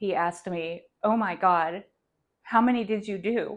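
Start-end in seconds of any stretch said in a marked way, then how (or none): 1.0-3.6 loud, mock frantic, alarmed, panicked blurt. Retelling what he kept asking her back then; imitating a panicked voice. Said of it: "He had a panicked voice".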